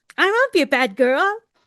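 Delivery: very high-pitched, loud lying voice. Speaker shows how someone's pitch rises when lying; high-pitched lying voice. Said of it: "It's it's like they're like".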